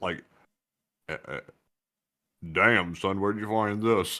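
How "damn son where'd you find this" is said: super low, deep put-on talking voice. Showing a disguise voice to another speaker: talking super low. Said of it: "I'm gonna either talk super low".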